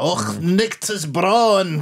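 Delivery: mock archaic Scots accent. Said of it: "just all this pure old-fashioned language".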